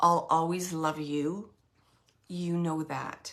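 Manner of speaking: utterly serious, low tone. Passing on a message someone is saying, imitating someone being really serious. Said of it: "really serious".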